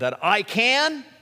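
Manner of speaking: "I can" stressed, drawn out high and slow. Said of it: "Where do you put the emphasis".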